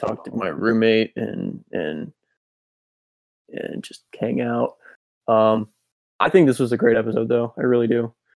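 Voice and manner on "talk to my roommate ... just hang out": slow, soft, exhausted voice. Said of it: "hear it in my voice".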